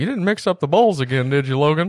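put-on very high old man voice. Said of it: "He sounds like a ninety-year-old man from".

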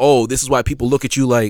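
plain

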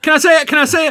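high, loud, eager pleading tone. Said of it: "I just kept on saying".

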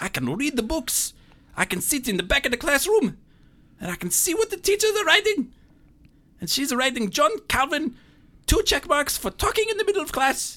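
exaggerated, hammed-up Italian accent. Performing a scene about a classroom, in a Mario-like Italian accent. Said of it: "you sound like Mario came to life".

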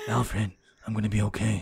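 put-on muttering under the breath. Praising Robert Pattinson as Batman, imitating Batman muttering under his breath. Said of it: "He's like muttering under his breath".

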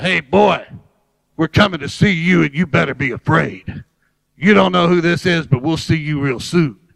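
put-on scary, low, disguised, menacing voice. Prank-calling a man on the phone to scare him, disguised voice. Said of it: "I disguised my voice and I said".

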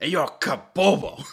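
put-on angry voice. Asked during a game to say a given phrase in an angry voice. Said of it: "say your phrase in an angry voice".

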